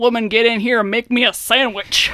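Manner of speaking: doltish oaf way of talking. Retelling Mulder's line to Scully in a scene, Mulder's dumb man voice. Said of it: "he puts on like a dumb man voice".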